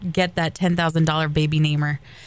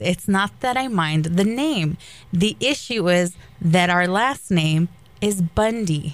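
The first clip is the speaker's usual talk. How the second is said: normal talking voice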